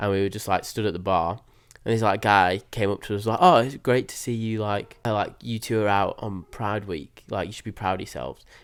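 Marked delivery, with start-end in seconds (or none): 3.4-8.4 play-acted, sneering, dripping with sarcasm. Retelling what a guy at a bar said to two friends, imitating his sarcastic tone. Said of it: "In like a sa- sarcastic tone".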